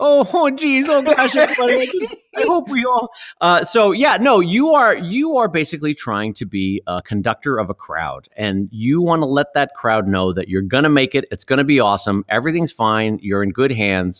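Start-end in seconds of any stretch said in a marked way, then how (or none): 0.0-2.8 put-on nervous, stammering cartoon boy voice, pitched higher. Imitating an anxious pilot who sounds like Morty. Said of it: "you just start sounding like Morty".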